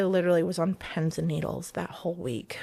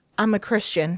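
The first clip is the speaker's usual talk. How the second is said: mock delighted, cheerful, pleased tone; 2 semitones higher, 4 dB louder than usual. Speaker retells what someone announced to them; imitating a big grin. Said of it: "he has this biggest grin on his face".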